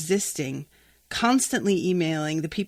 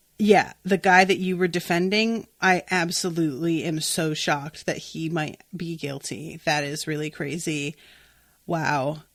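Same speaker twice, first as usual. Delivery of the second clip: ordinary talk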